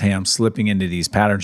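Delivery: plain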